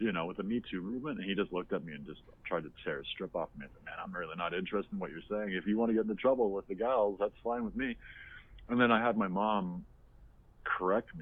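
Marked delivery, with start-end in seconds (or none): none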